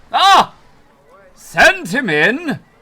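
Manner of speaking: large, resounding, very loud booming voice. Telling a story, the speaker voices the man in the office, large booming voice. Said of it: "a very large, booming voice from the office".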